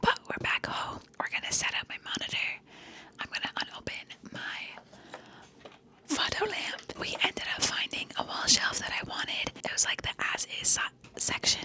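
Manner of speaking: breathy, hushed whisper, very soft. Talking to viewers at home while mom is sleeping; whispering. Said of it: "I'm whispering because my mom is sleeping".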